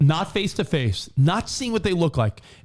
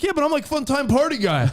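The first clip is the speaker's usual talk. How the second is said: cheesy party-dude voice, pitched a bit high; 8 semitones higher than usual. Imitating the party guy answering his partner: Cole impression, cheesy party dude. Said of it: "cheesy, a little sleazy, life of the party dude".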